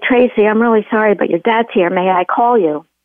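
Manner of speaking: usual speaking voice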